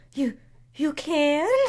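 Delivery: whispered. Narrating a character who glances around to check no one's listening, whisper. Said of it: "she whispers".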